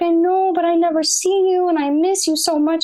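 mock crying, high, tearful sobbing through words. Retelling dad at the bottom of the stairs: imitating dad crying. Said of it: "still cries and cries and cries".

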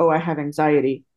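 plain

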